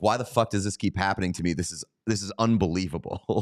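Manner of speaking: ordinary talk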